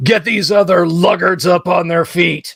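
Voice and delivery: growling gnoll voice. Narrator voicing the one on his feet waking the others, growled. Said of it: "he growls".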